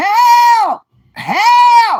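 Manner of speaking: piercing, very high, very loud, drawn-out scream. Speak as a drinking lady's liver calling out, mock-screaming in Nard's voice. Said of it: "that lady liver is screaming".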